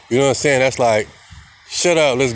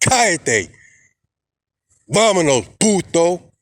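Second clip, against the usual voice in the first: firm, direct, authoritative delivery; 4 semitones higher than usual. Explaining how he speaks spanish to people, saying it authoritative and direct. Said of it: "I'm saying it with authority".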